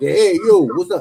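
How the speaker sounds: very loud, drawn-out put-on Brooklyn accent. Explaining how to build a character persona, the speaker gives an example: Brooklyn accent. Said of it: "you don't want to give this person a Brooklyn accent".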